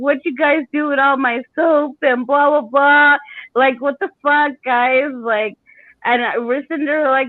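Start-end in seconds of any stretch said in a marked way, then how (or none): 0.0-5.1 acted old man voice, angry screaming rant. Retelling a grandfather screaming at the kids: imitating grandfather screaming. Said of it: "He was screaming at us".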